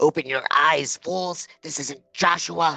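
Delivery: mysterious, disembodied, unseen voice breaking in. Voicing a third voice correcting the others: third disembodied voice. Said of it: "Then a third voice chimes in".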